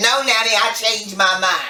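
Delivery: ordinary talk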